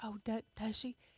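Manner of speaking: half-whisper with no voice, very soft. Retelling a half-whispered reply to a child: retelling own half-whisper. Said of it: "you have to whisper back to him".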